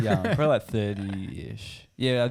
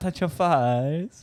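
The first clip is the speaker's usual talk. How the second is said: put-on baby talk, higher; 6 semitones higher than usual. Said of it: "He was putting some baby thing on".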